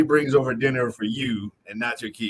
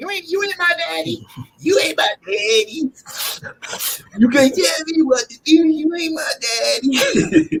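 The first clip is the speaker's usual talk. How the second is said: put-on very high-pitched, defiant, back-talking child voice; 4 dB louder than usual. Recalling when it happened to him, the speaker imitates the kids: kid impression. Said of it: "that's my best impression when it happened to me".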